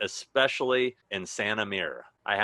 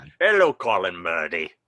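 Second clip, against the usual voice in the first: put-on Irish accent, louder; 7 dB louder than usual. Greeting a viewer named Colin from Belfast: put-on Irish accent. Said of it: "You do a better Irishman than I do".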